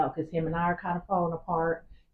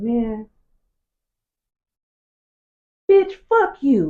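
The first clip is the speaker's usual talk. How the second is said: put-on deep guttural voice, higher and louder; 6 semitones higher, 11 dB louder than usual. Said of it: "said that from, like, down here in his fucking gut".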